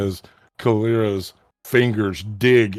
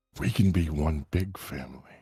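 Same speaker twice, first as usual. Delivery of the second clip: very quiet, hushed, close half-whisper; 5 semitones lower, 10 dB quieter than usual. Voicing an unseen figure speaking into a character's ear: half-whispering in the ear. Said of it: "whispers in your ear".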